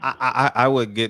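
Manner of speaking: stuttering start, stuck on the first word "I". Discussing a press conference with a co-host, stuttering. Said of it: "I'm stuttering".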